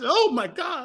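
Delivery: high exclamation with voice cracking midway. Retelling own reaction to hearing the price: imitating own voice going high. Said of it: "My voice got high".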